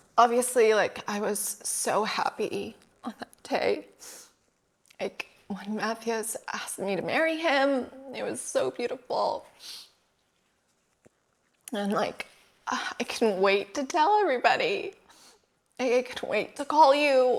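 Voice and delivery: talking through tears. Overcome with emotion, asking for more tissue, crying while talking. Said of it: "I can't talk".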